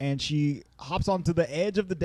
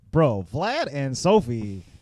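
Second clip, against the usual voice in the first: ordinary talk, nothing marked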